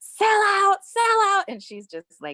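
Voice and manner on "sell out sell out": shrill, very high, very loud, repeated scream. Retelling how a girl screamed at the speaker and her boyfriend leaving the mall: retelling a girl screaming. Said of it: "starts screaming".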